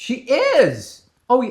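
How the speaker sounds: voice squeaking way up. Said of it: "my voice just cracked".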